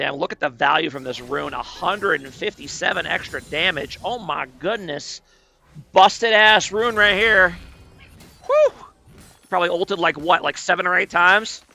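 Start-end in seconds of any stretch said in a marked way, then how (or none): 0.2-7.6 ironic, sarcastic, put-on admiring tone. Commenting on a game's rune value, sarcastic praise. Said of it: "If you can't tell from my sarcasm".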